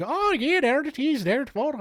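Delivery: put-on failed Scottish accent drifting very high in pitch. Retelling people walking past Burke's dissected body, in a Scottish accent slipping into Swedish Chef. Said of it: "I was trying to do Scotland".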